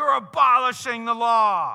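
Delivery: boisterous, over-the-top delivery. Retelling how one rabbi answered another's interpretation: imitating a boisterous, over-the-top retort. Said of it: "it was just a boisterous, over the top".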